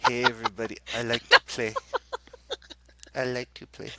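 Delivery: put-on swooping sing-song character voice, pitch bouncing around. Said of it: "Why are you talking like Garth?".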